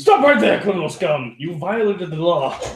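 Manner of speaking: furious, loud, acted angry yell. In a role-play scene, a player's character runs at a bugbear yelling at him. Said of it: "start yelling at him".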